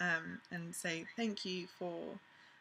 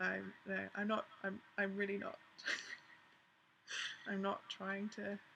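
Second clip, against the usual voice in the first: soft voice, fighting not to cry, holding back tears; 5 dB quieter than usual. Making an emotional response video, holding back tears. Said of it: "I'm desperately trying not to cry".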